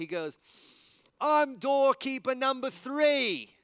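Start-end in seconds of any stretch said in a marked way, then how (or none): 1.2-3.4 put-on squealing, very high, very loud, proud, joyful child. Telling a story about a kid, the speaker imitates him, imitating a joyful kid. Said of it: "with just joy and the biggest smile".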